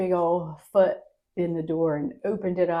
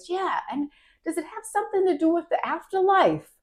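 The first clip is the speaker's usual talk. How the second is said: put-on New York accent with high pitch; 12 semitones higher than usual. Retelling what a man asked about the speaker's book, New York accent. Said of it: "in his New York accent".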